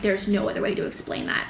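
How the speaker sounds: normal talking voice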